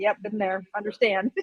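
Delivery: ordinary delivery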